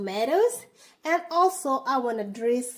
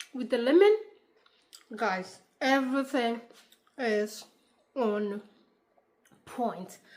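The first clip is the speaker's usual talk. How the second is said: speaking while eating, between bites. Tasting the food on camera for viewers, talking while eating. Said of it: "eating on camera".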